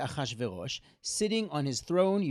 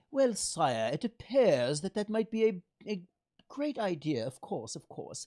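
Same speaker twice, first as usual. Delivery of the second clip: hesitant, deferential, high-pitched, bad put-on British accent; 5 semitones higher than usual. Describing a relief, acting out a person standing before the king, in a bad british accent. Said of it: "my British accent isn't so good".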